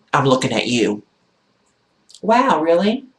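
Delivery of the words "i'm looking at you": mock-nasty, rude, ignorant tone with attitude. Retelling a stare-down, the speaker quotes the man's reply: imitating a nasty reply. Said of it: "Very nasty, ignorantly, with an attitude".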